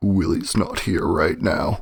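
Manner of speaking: low, deep, growly growling voice. Answering when someone asks for Willy, in a growly voice. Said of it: "you hear a growly voice".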